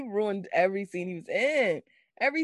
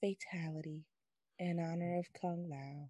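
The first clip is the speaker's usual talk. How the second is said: very soft, low, flat, lifeless voice. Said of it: "He was like".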